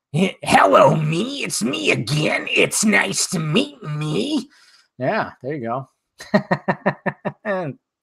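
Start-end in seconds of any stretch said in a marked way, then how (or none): 0.2-4.5 slow, drawn-out, rough and creaky rocker voice. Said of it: "I do a good [name]".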